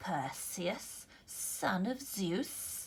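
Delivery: very slow, drawn-out hissing serpent monster voice. Narrating a story, voicing a snake-covered monster addressing Perseus, hissing. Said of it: "she hissed".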